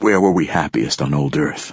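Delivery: ordinary delivery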